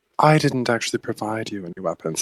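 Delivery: whispering, low and hushed. Playing Genevieve, leaning forward to remind him, in a low whisper. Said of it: "I kind of whisper lowly".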